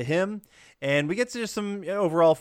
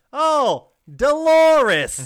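booming, shrill, very loud, high-pitched yell; 12 semitones higher, 8 dB louder than usual. Retelling a man calling out a window after a woman: imitating someone yelling. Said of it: "he yells out the window".

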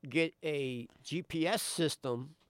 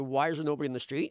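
normal talking voice

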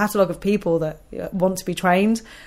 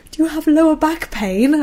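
mock-meek, mild voice pitched much higher; 9 semitones higher than usual. Retelling asking her authoritative sister a question: put-on meek, mild voice. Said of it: "Like in a meek and mild voice".

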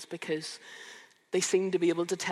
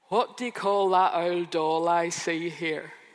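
put-on broad Northern Irish Newry accent, laid on thick; 6 dB louder than usual. Retelling what Nathan would say on walking up to reception, in his thick Newry accent. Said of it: "in his thick Newry accent".

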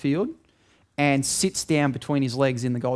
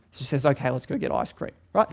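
ordinary talk

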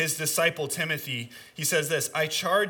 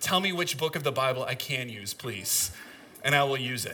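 put-on, heavy, slightly overdone sarcasm; 3 semitones lower than usual. A speaker acts out what they said to him earlier: retelling a sarcastic request. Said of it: "I kind of sarcastically, probably a little too sarcastic".

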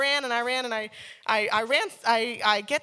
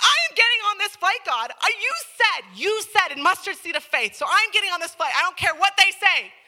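put-on angry voice, loud and pitched up; 8 semitones higher, 6 dB louder than usual. Retelling a prayer while stuck in a long line before a flight: retelling an angry prayer. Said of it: "now I prayed angry".

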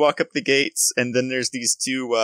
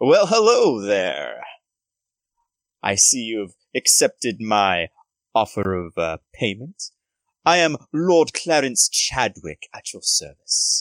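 put-on posh, noble-sounding voice. Voicing a posh noble greeting the party: Lord Clarence Chadwick voice. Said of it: "really opulent, really posh".

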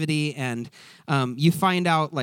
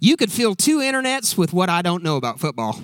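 put-on American southern accent; 3 semitones higher, 5 dB louder than usual. Quoting a couple of Ted's sayings: Ted impression, southern accent. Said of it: "do it I'm in a southern accent".

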